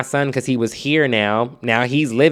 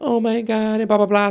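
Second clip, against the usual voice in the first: mock very high, tearful, sobbing crying voice; 10 semitones higher than usual. Retelling the roommate's reaction after being told to leave: imitating someone crying. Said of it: "she's crying".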